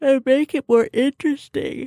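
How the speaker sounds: words stretched by a yawn. Explaining why a company can change the rules, yawning while talking. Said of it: "Why are you yawning as you say the word interesting?".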